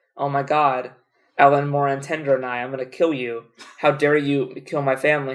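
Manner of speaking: ordinary talk, nothing marked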